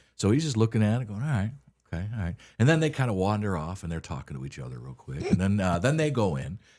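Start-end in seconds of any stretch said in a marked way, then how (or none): 1.3-2.4 flat, even, expressionless monotone drone. Retelling how the dealer looked over the truck: imitating Randy's monotone. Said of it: "He's very monotone".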